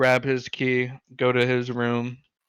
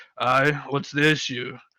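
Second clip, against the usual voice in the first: put-on fantasy half-orc creature voice. Voicing a half-orc who answers a stranger at the table: voicing a half-orc. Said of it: "the half orc looks at him and goes".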